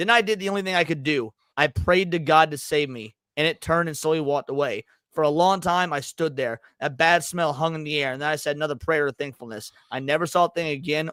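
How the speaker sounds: plain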